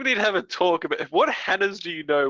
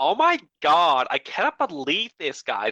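put-on high-school girl voice. Coaching Nick to make his voice sound more like a Hannah, Hannah voice. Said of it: "You gotta do the more like".

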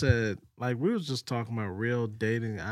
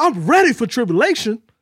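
put-on convinced, gung-ho tone, higher and louder; 11 semitones higher, 12 dB louder than usual. Retelling a friend's declaration about dating: imitating James, so convinced. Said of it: "This dude was so convinced".

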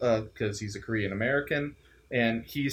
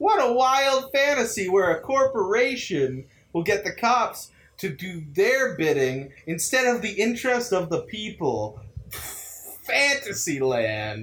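laid-on-thick, exaggerated sarcastic tone, pitched up; 5 semitones higher than usual. Discussing a Bong Joon-ho film with listeners; exaggerated sarcasm. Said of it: "I'm playing up my sarcasm".

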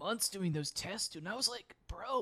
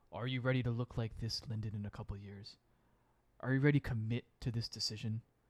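put-on deeper, low inner voice; 9 semitones lower than usual. Describing a mirror scene, a voice addresses lyndon about a decision, in a deeper voice. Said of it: "And a deeper voice says".

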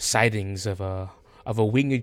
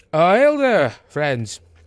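put-on little old man voice, much higher, louder; 8 semitones higher, 7 dB louder than usual. Narrating the players' way up, the speaker voices the guard: little old man voice. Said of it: "he just goes".

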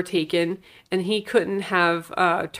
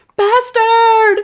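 put-on scream, higher and louder; 10 dB louder than usual. Retelling a film scene where she screams at someone: imitating someone screaming. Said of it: "she's just screaming".

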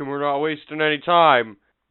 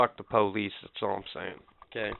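resentful, bitter, breathy half-whispered grumble; 6 semitones lower, 11 dB quieter than usual. Complaining about being held up by the police: bitter. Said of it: "you sound real bitter".

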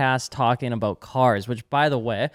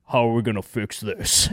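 low, deep action-hero trailer voice; 4 semitones lower than usual. Imagining a movie trailer scene, doing a Vin Diesel impression. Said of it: "that impression was actually pretty good".

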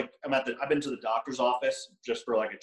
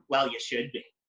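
put-on snide, passive-aggressive aside from mouth's corner. Retelling what a passerby in a store said: imitating a passive-aggressive mutter. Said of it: "passive aggressively, like, out of the side of their mouth go".

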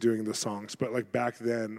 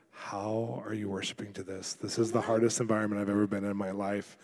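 put-on whisper, quieter, lower; 2 semitones lower, 4 dB quieter than usual. Speaker recounting what he asked a woman during worship, retelling a whisper. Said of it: "I whispered to her".

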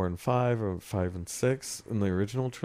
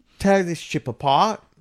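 put-on Cockney accent, higher and louder; 10 semitones higher, 9 dB louder than usual. Retelling a Darth Vader line as David Prowse said it: David Prowse Cockney accent. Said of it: "He has a Cockney accent".

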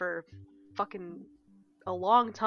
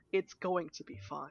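fake reassuring tone, quieter; 2 semitones lower, 5 dB quieter than usual. Mimicking another speaker's reassurance: imitating a friend's mock reassurance. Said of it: "you said that in such a way where it's like".

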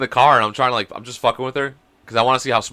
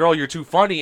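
ordinary talk

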